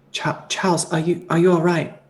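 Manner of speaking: soft concerned voice.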